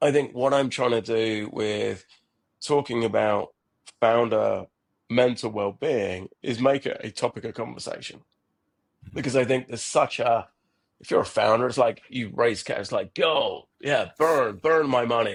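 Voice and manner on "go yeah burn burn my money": slow, drawn-out, fake American accent. Discussing founder well-being, voicing a founder after raising cash: put-on american accent. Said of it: "I don't know why I'm doing an American accent".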